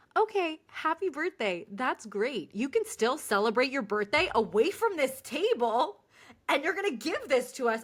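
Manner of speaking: snide, rude, mean, dismissive tone. Retelling a reply to the men about a birthday: imitating own mean tone. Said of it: "so I started getting mean".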